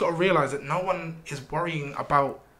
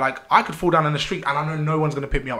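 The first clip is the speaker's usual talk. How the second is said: usual speaking voice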